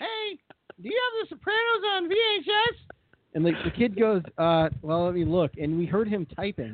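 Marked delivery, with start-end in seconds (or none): 0.0-2.8 very high-pitched voice. Retelling Al phoning a store to ask about a tape: Al's voice for parents. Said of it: "his default voice for parents".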